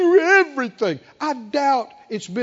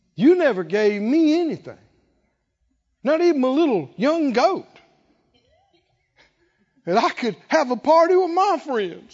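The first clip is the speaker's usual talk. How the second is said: aggrieved, high, complaining gripe; 5 semitones higher than usual. Acting out the elder son complaining to his father: evil voice of unbelief. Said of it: "Do you hear the evil voice of unbelief?".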